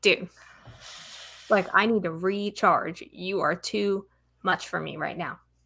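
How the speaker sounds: usual speaking voice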